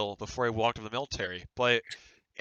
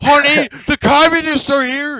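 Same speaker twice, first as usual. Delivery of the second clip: mock panic, louder; 13 dB louder than usual. Imitating boomers who hear about the communists: imitating panicking boomers. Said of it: "They're probably panicking".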